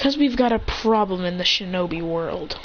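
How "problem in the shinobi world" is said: plain reading voice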